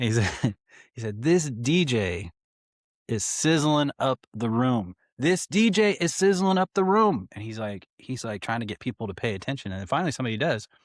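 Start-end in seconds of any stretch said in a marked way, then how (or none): 1.2-7.3 high, drawn-out, terrible hype-man-style shout. DJ retells a celebrity shouting at him from the dance floor, retelling a yell. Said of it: "And he yelled".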